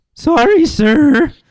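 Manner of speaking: very high, loud, squeaky cartoon voice. Imitating a voice that is almost gone: The Simpsons guy voice. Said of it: "Sounds like that, the guy out The Simpsons".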